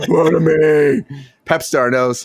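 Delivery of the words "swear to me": put-on rough, gravelly voice. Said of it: "in his John Connor voice, where he's always still talking like Batman".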